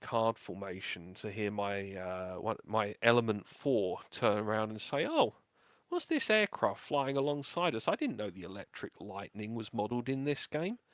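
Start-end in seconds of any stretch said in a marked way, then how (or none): 5.1-10.8 bewildered, puzzled voice swooping in pitch. Retelling a flight member's remark during a flying game, mock-confused. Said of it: "you could sort of hear the confusion in his voice".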